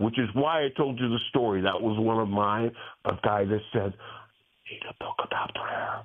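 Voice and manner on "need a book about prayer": put-on whisper, quieter. Retelling what a customer said about wanting a prayer book: imitating someone whispering. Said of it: "Why are you whispering?".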